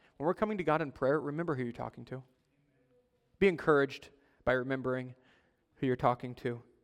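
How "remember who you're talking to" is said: soft, quick, comforting and reassuring tone. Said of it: "not as a threat, but as a comfort".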